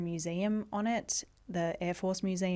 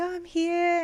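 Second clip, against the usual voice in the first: acted bubbly chirp, very high and raised; 11 semitones higher, 6 dB louder than usual. Recalling arriving at Melbourne airport at seventeen and walking over to the MSI, imitating a chirpy bubbly younger self. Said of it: "being like chirpy and all like".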